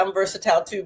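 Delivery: ordinary delivery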